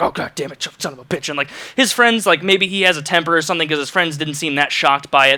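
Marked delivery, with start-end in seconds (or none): 0.0-1.3 put-on angry muttering, quieter. Describing a man reaching under a vending machine for his phone, retelling angry muttering. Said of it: "still mumbling under his breath like".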